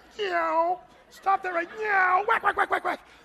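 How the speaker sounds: very high, cat-like, meowing scolding voice. Mimicking a Kmart mom scolding her kid: imitating a mom's cat-like meow. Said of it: "It's like they're a cat".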